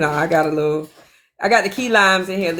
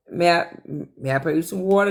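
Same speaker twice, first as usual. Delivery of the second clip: ordinary talk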